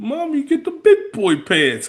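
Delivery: very high, sing-song, mocking bully voice. Retelling a bully mocking a boy in a store: imitating a bully's mocking voice. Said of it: "the voice he makes".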